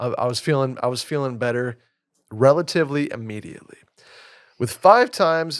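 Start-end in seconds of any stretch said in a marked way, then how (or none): 4.6-5.6 loud voice breaking and cracking mid-phrase. Reading a sports drink ad aloud, the speaker's voice breaks: voice cracking. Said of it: "my voice just cracked there".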